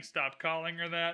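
ordinary talk, nothing marked

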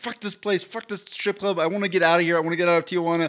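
acted-out angry, fed-up, freaking-out rant. Retelling freaking out inside a tijuana strip club, retelling own anger. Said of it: "I'm just mad".

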